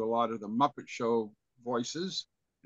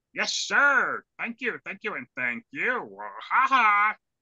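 loud, bouncy, goofy voice; 9 semitones higher, 7 dB louder than usual. Asked by others to do Fozzie Bear, performing a Fozzie Bear voice. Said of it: "do Fozzie Bear".

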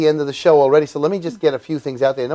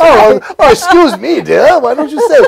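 very high, very loud, screeching character voice; 10 semitones higher, 8 dB louder than usual. A performer slips back into a familiar voice, prompting someone to say it: Scrooge voice. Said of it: "the Scrooge voice is back again".

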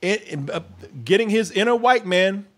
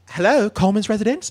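prim, polite telephone-answering voice.

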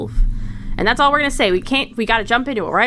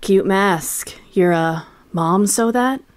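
put-on deep swordsman voice, lower; 4 semitones lower than usual. Doing a quote that Yasuo says to Shen: Yasuo voice. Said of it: "this is something that he says to Shen".

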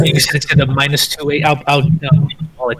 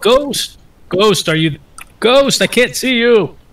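high, raised shout; 7 semitones higher than usual. A player describes their character running toward an unseen ghost: shouting. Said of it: "I'm shouting".

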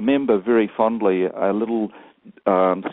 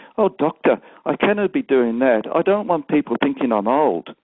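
Scottish brogue, pitched higher; 5 semitones higher than usual. A doctor retells his 104-year-old patient replying to him, Elizabeth's Scottish brogue. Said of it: "in a nice Scottish brogue".

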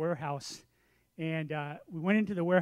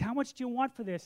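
eager, all-excited, pitched-up voice; 6 semitones higher than usual. Retelling a man asking a seller the price of a table, imitating his excitement. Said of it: "he's all excited".

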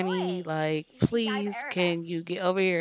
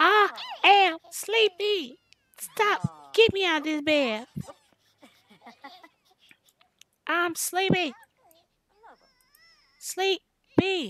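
put-on very high, swooping, drawn-out baby talk; 12 semitones higher, 3 dB louder than usual. Voicing a game baby's thoughts after saying she is sleepy: baby voice. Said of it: "thinking in her baby voice".

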